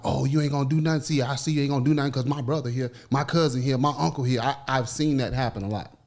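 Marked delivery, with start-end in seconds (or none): 0.0-4.4 put-on taunting woman's voice. Retelling what women say to a man they provoked: imitating a taunting woman. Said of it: "they'll see you there and be like".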